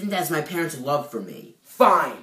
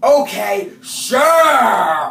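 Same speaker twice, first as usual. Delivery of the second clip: loud, mocking, disbelieving sarcastic drawl on "sure"; 5 semitones higher, 9 dB louder than usual. In a scene about stolen Christmas gifts, answering a denial, sarcastic. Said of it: "sarcasm is not a good look on you".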